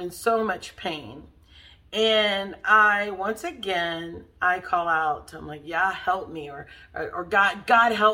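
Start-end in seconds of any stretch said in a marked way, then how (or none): 5.6-8.1 acted desperate crying out. Weak and in pain when told to push, the speaker calls to God: retelling crying out for help. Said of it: "And I'm crying out".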